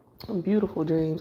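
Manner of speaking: usual speaking voice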